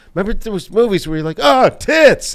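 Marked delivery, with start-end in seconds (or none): 1.4-2.3 put-on excited exclamation, high and loud. Recalling eighties movies, imitating an excited viewer. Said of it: "you were so excited by just tits".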